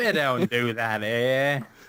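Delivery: Australian accent with a wide-ranging pitch.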